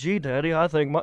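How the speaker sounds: dull-witted, dopey, simple-sounding voice. Imitating the dim-witted sheriff's son talking to his daddy: dim-witted movie son. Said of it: "he was this dim-witted".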